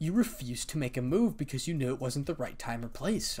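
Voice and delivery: ordinary talk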